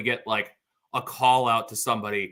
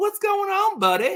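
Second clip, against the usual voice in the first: put-on cheerful Southern accent, much higher pitch; 4 dB louder than usual. Retelling how he answered the phone, imitating a happy southern accent. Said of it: "Like with that southern accent, like just the happiest".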